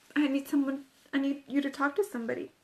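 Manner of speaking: ordinary delivery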